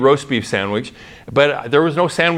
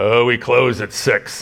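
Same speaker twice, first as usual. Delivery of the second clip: surly, grumpy growled delivery. Retelling how the man behind the counter answered after closing, retelling a growl. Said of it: "he just kind of growled at me".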